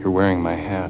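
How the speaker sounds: speaking very softly. Retelling a movie scene where a character steps forward: speaking very softly. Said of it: "very softly".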